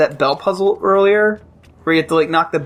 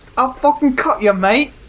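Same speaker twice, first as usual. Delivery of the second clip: put-on British accent with pitch raised higher; 8 semitones higher than usual. Joking about how Lara Croft talks, mock British accent as Lara Croft. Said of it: "sorry to any British viewers".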